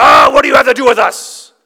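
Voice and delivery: very loud, high, swooping cry, near scream. Telling how a man at a gathering suddenly got up: retelling a man crying out. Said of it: "he cries out and he goes".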